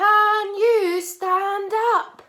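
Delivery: very loud, drawn-out, slow, high-pitched voice. Leading listeners to repeat a sentence, in a big loud voice. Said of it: "This time we are going to use a big loud voice".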